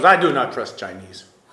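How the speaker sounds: put-on heavy Russian accent. Retelling what a hospital nurse said yesterday, in a heavy Russian accent. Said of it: "She had this very heavy Russian accent".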